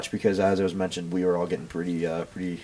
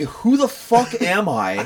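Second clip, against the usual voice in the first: very high, shrill, drawn-out scream; 12 semitones higher, 5 dB louder than usual. Retelling being woken by a man racking a shotgun: imitating someone screaming. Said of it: "racking a shotgun in my face and screaming".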